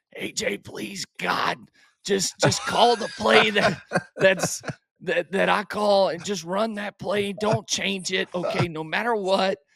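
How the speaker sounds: rough, raspy, high-pitched voice. Retelling what Nuss said back in the huddle, in a raspy Nuss voice. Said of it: "Nuss always had a raspy voice".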